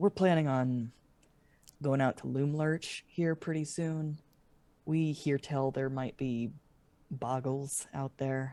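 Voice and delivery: speaking quietly. Voicing a character talking so the kids don't hear: lowered voice. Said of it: "he lowers his voice so that the kids don't hear".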